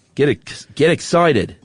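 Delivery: laid-on Australian accent. Inviting the australian audience to a coming tour: put-on australian accent. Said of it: "you just sold us a million tickets with that accent".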